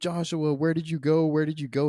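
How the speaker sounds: mock-sad calling out. Recounting a film dream scene, a man follows his son; imitating a sad plea. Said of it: "He's sad".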